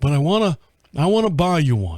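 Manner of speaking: put-on Texan accent in a dad voice. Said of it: "he sounds like Hank Hill".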